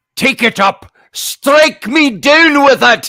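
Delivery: put-on booming Scottish accent, very high and very loud. Retelling what a man in a chair said, in a scottish accent. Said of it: "So he's got a Scottish accent".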